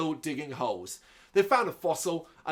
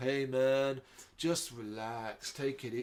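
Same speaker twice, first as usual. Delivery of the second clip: chilled-out, slow, soft stoner surfer drawl; 3 semitones lower, 7 dB quieter than usual. Recapping a movie scene, quoting a resident as Tortimer walks away: surfer-style stoner voice. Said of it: "in a really surfer-style stoner voice".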